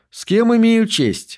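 pleasant, courteous tone. Pendergast addresses the man in the brown suit, in a pleasant voice. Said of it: "приятным голосом спросил Пендергаст".

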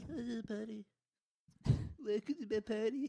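squeaky, very high meowy cat voice. Bantering about the word potty, talking in a cat voice. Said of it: "That's the voice of my cat".

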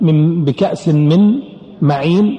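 slow, stress on من in بكأس من معين.

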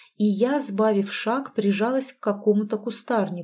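ordinary delivery

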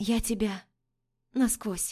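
trembling, shaky, quavering voice. Heroine meets her fiancé's gaze and speaks to him in a trembling voice. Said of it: "произношу дрожащим голосом".

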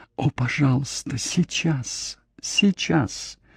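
slow, breathy, begging, pleading whisper. A young woman begging the man caressing her: pleading whisper. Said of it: "умоляюще прошептала".

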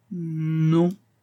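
unsure, hesitating, high, drawn-out non. The music teacher answers Julia's question about suspicions, hesitant murmur. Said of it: "murmura la maîtresse de musique avec hésitation".

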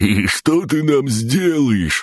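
very high, slow, amused, mocking taunt. The brown-haired one answers back to the narrator, amused. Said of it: "веселился Каштановый".

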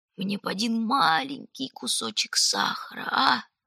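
hoarse, wheezing voice. Collapsed under a pine and asked if he needs help, he answers wheezing. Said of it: "просипел Раф".

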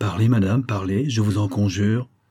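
ordinary talk

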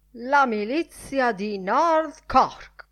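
drawn-out exclamation. The editor strides to the fireplace, exclaiming. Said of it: "Esclamò il direttore".

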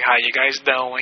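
creepy, slow cartoonish voice. Describing a creepy character from Family Guy: creepy Family Guy character impression.

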